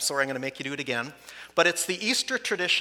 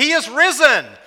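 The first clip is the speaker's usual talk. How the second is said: near shout, higher and louder; 11 semitones higher, 11 dB louder than usual. Leading a call and response, last and loudest round: almost shouting. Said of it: "we're gonna almost be shouting by the end".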